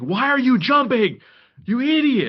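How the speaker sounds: loud high screaming.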